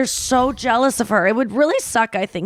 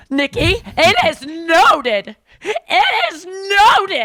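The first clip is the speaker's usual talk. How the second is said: straining, high, affected put-on voice; 6 semitones higher, 3 dB louder than usual. Speaker reading out a woman's message written in that voice, strained put-on voice. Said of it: "I know it's terrible for my voice".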